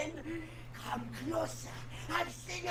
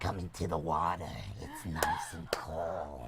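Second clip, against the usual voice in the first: put-on low, cold, drawn-out old-lady voice. Describing a woman who hit on all the boys: Harvey Fierstein old woman voice. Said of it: "a Harvey Firestein turned into an old woman".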